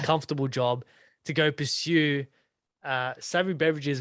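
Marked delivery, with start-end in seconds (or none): none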